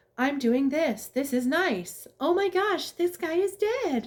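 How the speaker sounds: put-on upbeat reading voice. Complaining about an ai reading a murder scene in a book, mock-cheerful ai narrator voice. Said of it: "the A I is reading it happy".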